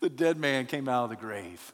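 ordinary talk

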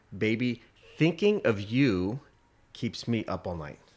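normal talking voice

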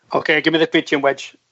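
ordinary talk

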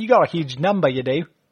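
put-on Australian accent. Imagining a game show host greeting a contestant: Howie Mandel doing Australian accent. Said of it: "Australian, I think".

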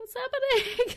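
very high, loud, startled outcry. Speaking in character after the narrator describes the line: calling out in surprise. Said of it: "you kind of call out in, in surprise".

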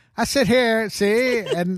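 put-on high, old-timey gangster cat voice.

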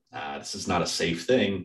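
ordinary talk, nothing marked

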